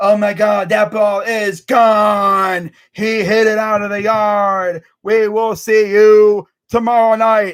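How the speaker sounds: very slow, hollow, stretched-out fake-hyped announcer voice. Imitating a baseball announcer's home run call: imitating a fake-hyped announcer. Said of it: "he'd get fake hyped".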